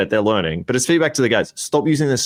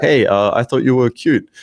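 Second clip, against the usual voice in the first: mock deadpan, flat, emotionless monotone; 3 dB louder than usual. Mocking the pickup lines of london day game model guys: imitating a flat, emotionless pickup line. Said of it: "London day game model guys being like".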